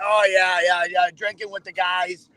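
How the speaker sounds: imitated Massachusetts accent. Mocking wannabe locals to another speaker: imitating a Massachusetts accent. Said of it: "We don't all talk like this".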